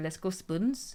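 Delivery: put-on Glaswegian Scottish accent. Quoting a girl from university who was from Glasgow, in a Glasgow accent. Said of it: "like that".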